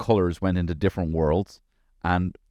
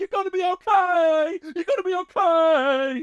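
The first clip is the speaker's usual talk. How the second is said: okay drawn out, very high and very slow. Retelling yelling to keep his child awake while driving: Harvey Keitel in Reservoir Dogs. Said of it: "I'm like Harvey Keitel".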